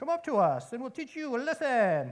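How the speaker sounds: put-on French accent. Retelling a Bible story, voicing the outpost men calling to Jonathan, in a fake French VeggieTales accent. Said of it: "a fake French accent maybe".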